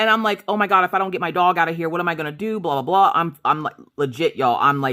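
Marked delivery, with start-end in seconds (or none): 0.5-2.6 put-on panicked, frantic delivery. Retelling trying to get the dog out of the ice: imitating own panic. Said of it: "I'm freaking out".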